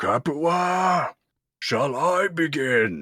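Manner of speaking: commanding shout, very high and very slow. Doing another line from the show: Crixus yelling voice. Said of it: "when he yells, it's like he commands attention".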